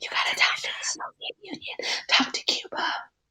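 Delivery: put-on parakeet whisper. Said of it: "The parakeets are there whispering like".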